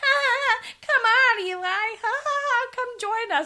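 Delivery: very high, loud, annoying giggly laughing voice. Mocking a girl hanging out with Eli on Skype, imitating Lenore's loud laugh. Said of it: "annoying, loud, laughing girl who's like".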